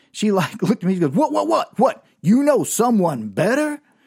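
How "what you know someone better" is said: affronted, offended, high, drawn-out indignant tone. Retelling how a woman reacted to his question: mock-indignant. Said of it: "she got all indignant".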